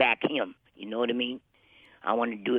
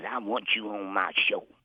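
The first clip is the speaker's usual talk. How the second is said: put-on rough voice, slower. Retelling how a man asked you to be on his show, imitating his rough voice. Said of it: "he always had that rough voice".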